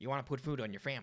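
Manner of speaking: put-on happy-go-lucky, carefree-sounding Texan accent. Answering what Bush's voice sounds like: George Bush voice. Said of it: "Like a happy-go-lucky Texan".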